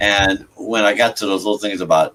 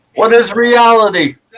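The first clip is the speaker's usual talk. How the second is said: loud, high-pitched yelling. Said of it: "I'd be yelling stuff like".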